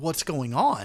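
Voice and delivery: terrified startled voice. Voicing a startled character caught off guard: frightened. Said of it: "just out of fear".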